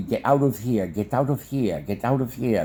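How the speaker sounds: ordinary talk, nothing marked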